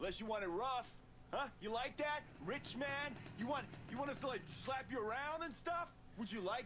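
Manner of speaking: threatening, menacing, intimidating tone. A character outside a door threatens the rich man inside, being threatening. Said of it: "I'm being threatening".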